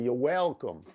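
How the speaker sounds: put-on American Southern accent. Joking with a co-host, repeating a phrase: Brian Kelly Southern accent. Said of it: "Let me say it like Brian Kelly would say".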